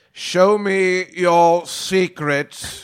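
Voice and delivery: very slow, loud, dragged-out drawl. Looking at the Tom Riddle book, doing a Snape imitation. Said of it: "You don't like my Snape imitation?".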